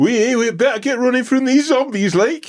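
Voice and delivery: clumsy Geordie accent, pitched very high. After admitting his Geordie accent was bad, he is asked to try it, bad Geordie accent. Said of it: "My Geordie accent was so bad".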